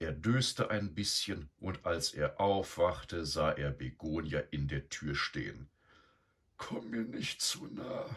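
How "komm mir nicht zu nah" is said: feeble, weak, whispered murmur. Eduard, lying down and trying to look sick, warns Begonia, murmuring weakly. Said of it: "murmelte er schwach".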